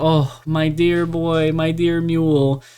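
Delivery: put-on, weepy, slow, tearful sobbing. Retelling a book scene where a character cries to his mule: imitating someone crying. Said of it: "he starts crying".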